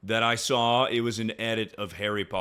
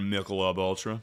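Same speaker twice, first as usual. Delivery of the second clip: normal talking voice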